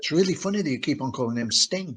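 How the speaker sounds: soft, discreet, confiding stage half-whisper. Retelling what a team member discreetly said: imitating a half-whisper. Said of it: "she whispered to us".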